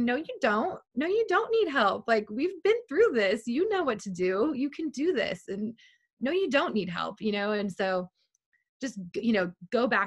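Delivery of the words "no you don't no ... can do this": animated, sing-song, rallying cheerleader voice. Retelling starting to panic, she voices her self-talk in her inner cheerleader voice. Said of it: "my cheerleader voice came in and she was like".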